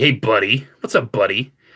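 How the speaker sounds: play-acted patronizing, condescending talking-down tone. Imitating people who say buddy: imitating a condescending tone. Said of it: "talking down".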